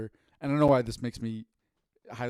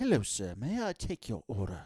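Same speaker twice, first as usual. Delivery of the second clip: rough, swooping, not-great put-on British accent; 4 dB quieter than usual. Imagining a McDonald's drive-through worker taking an order: not-great British accent. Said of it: "I can't do a, a great British accent".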